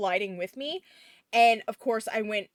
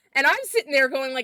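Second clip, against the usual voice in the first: ordinary talk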